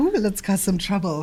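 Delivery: flirty, mischievous, playful, coquettish teasing voice. Voicing what another speaker's look seems to say: mock coquettish voice. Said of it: "You look a little coquettish there".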